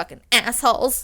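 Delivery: cursing, griping, complaining tone. Retelling DeFeo's complaint about his pay: imitating DeFeo complaining. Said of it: "I don't know why he talks like that".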